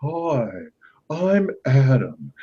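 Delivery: pitch swinging up and down, unmanly-sounding. Showing how the cartoon character talks: imitating Prince Adam's voice. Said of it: "I used to listen to the way he talks".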